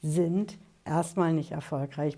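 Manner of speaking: "erstmal" stressed and said slowly. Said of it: "Betonung liegt auf erstmal".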